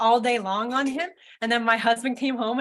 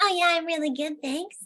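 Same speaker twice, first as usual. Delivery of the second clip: high little puppet voice, lifted higher; 6 semitones higher than usual. Voicing Tilly the puppet, greeting another speaker: Tilly puppet voice. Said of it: "when I bring Tilly to life".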